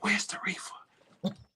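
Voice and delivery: slow whisper. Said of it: "whisper in my ear".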